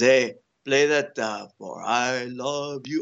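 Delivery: very slow, deliberate, drawn-out fatherly dad voice. Retelling what his dad asks him to play, imitating his dad. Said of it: "I always imitate my dad".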